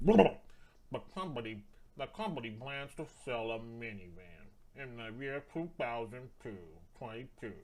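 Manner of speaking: attempted droopy cartoon hound voice. Attempting a cartoon voice while reading a passage aloud, Droopy Dog voice. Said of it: "I can't do a droopy dog voice".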